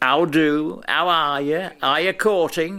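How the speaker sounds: put-on speaking in a Yorkshire accent. Speaker recalls the show host greeting his guests, Wilfred Pickles's Yorkshire accent. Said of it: "I'm going to do it in a Yorkshire accent".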